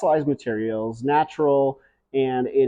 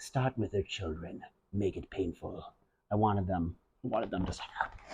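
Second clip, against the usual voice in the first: very quiet, low, sinister, menacing whisper; 5 semitones lower, 13 dB quieter than usual. Recounting treating soil mites with diatomaceous earth, retelling a menacing whisper. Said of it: "I'm like whispering to the Diatomaceous Earth".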